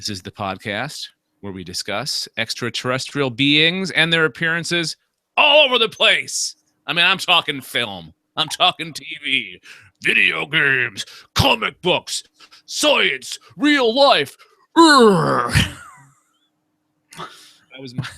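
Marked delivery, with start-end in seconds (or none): 0.0-15.8 put-on showman announcer voice, drawn-out final grunt. Introducing the podcast's topics in a Jesse Ventura slash Hulk Hogan impersonation. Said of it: "my Jesse Ventura slash Hulk Hogan impersonation".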